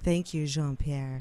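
deep, breathy, put-on seductive voice. Retelling a woman who winked and thanked Jean-Pierre: breathy Marilyn Monroe voice. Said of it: "she wouldn't have said it as seductive as I just did. That was a little seductive".

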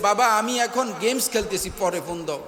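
ordinary talk

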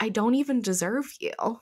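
normal talking voice

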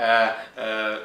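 mock panic, low, loud yelping.

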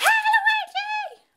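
shrill, very high screaming shriek. Someone arrives and calls out a greeting, screaming. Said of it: "Stop screaming!".

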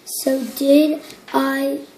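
ordinary delivery, nothing marked

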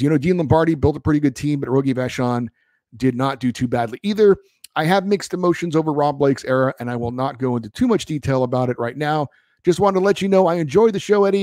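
ordinary talk, nothing marked

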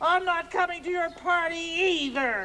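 cross, upset tone. A character tells Bert they are not coming to his party, angry. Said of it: "Why are you so angry?".

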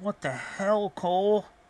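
muffled nasal voice. Reading a story, the narrator voices a man asking Cole, speaking through a muffled nose. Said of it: "asked him through his muffled nose".

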